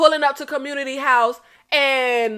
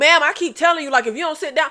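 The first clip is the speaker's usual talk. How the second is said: ordinary delivery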